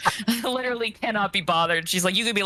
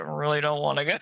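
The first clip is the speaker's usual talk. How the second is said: acted muttering under breath; 3 semitones lower than usual. Mocking a friend's offer to come along: imitating an under-breath mutter. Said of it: "Put her under her breath".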